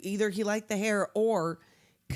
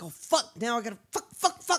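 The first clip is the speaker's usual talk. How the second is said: put-on flustered swearing, in a panic; 2 semitones higher than usual. Retelling a movie scene where the character panics: imitating a panicked character. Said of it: "He's like".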